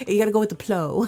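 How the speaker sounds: put-on mock Korean accent. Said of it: "making fun of his, his Korean accent".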